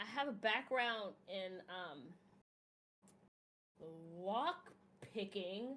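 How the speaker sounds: hesitant, purposely awkward delivery. A character hints at their skills to the group, as awkwardly as possible. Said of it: "as awkwardly as possible".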